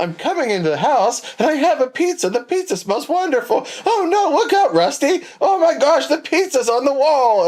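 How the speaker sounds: loud, very high, overacted commercial-style read. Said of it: "she was like the girls from Dis-, the Disney actresses from Saturday Night Live".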